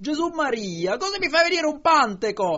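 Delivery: letting out a scream. A dozing woman is startled when another woman straightens her up, screaming. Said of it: "Lei caccia un urlo".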